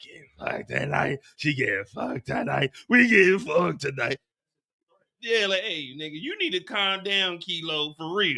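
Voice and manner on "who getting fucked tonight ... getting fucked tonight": scary, deep, rough-edged growl.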